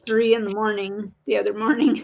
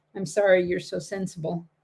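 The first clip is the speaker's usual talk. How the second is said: ordinary talk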